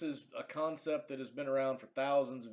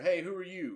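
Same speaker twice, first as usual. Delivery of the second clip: calling out, voice pitched up; 5 semitones higher than usual. Showing how to call out to a shady stranger from afar: yelling. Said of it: "So you yell out".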